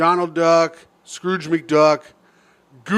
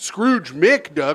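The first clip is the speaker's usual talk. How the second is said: plain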